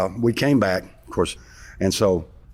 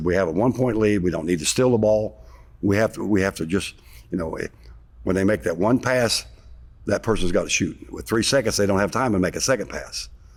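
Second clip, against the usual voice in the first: ordinary talk, nothing marked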